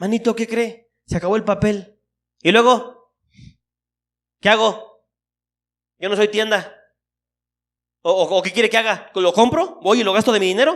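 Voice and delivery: curt, prickly, harsh defensive tone. Acting out how not to treat a fellow member: harsh, defensive tone. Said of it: "con un trato duro o a la defensiva".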